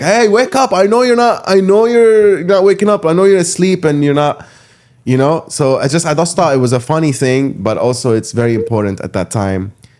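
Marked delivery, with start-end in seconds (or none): 0.0-4.5 mock high, very loud, carrying shout. Recounting a man waking the neighborhood for Fajr, imitating someone shouting. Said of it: "and he's shouting".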